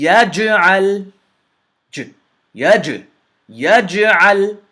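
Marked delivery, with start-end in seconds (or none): 0.0-1.1 echoed jim, higher and louder. Showing a learner the correct way to say the word: bounced jim, correct. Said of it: "the correct way is yaj'al".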